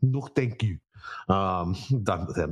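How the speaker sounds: bad, very slow, drawn-out Swedish accent. Speaker dismissing a player who lost, in a horrible swedish accent. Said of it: "That was a horrible Swedish accent".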